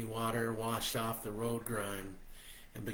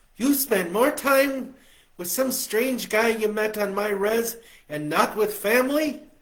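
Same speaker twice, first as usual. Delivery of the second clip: very loud, shrill, high-pitched scolding, nagging tone; 11 semitones higher, 14 dB louder than usual. She laughs and imitates their mom scolding the narrator, nagging mom voice. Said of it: "did her best mom voice".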